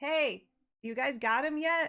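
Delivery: tossed, called back over the shoulder. In a game scene, Chandra calls back to the heroes while fighting zombies; Chandra shouting over her shoulder. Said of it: "she shouts over her shoulder like".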